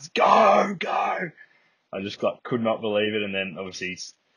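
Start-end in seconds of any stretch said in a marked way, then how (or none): 0.0-1.3 very high, loud, top-of-lungs scream. Retelling running behind the play as a teammate scored: imitating own screaming. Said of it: "just screaming at the top".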